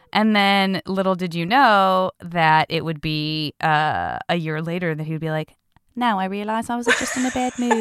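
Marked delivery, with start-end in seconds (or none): 6.0-7.9 put-on casual, quickly rattled-off New Zealand accent. Retelling what a man said a year later, in a New Zealand accent. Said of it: "I love your amazing Tycho accent".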